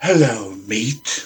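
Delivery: menacing, threatening delivery in a low, intimidating voice. A player making telepathic contact with Sugar: intimidating voice. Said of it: "say in a really intimidating voice".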